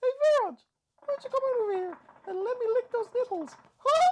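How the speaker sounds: very high, loud cartoon mouse voice. Teasing Viraj right after claiming a good Mickey Mouse, in a Mickey Mouse voice. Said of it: "I can do a good Mickey Mouse".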